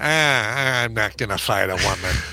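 low, slow put-on voice, "I'm" dropped low and stretched. Repeating what two people said, done in Adam Carolla voice. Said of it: "I'll do this in the Adam Carolla voice".

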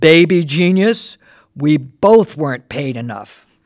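loud, slow, booming star-like voice.

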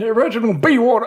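put-on improvised made-up old war-veteran character voice. Repeating the character's greeting after the intro: improvised character voice of Reginald. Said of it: "I've never done that voice before".

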